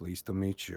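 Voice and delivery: very low, toneless, flat, unfriendly deadpan. Voicing a squinting character's greeting to someone, in a flat tone. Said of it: "he's just gonna say in a flat tone".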